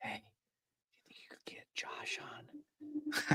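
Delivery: very quiet, breathy, close whisper. A father retells his daughter asking him something in his ear, whispering. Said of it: "My daughter whispered in my ear".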